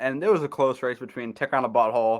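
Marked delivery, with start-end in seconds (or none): none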